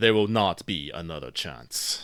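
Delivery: heavy, grave, serious and solemn delivery. Voicing a character who continues on after nodding, in a grave voice. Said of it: "vo- in a grave voice".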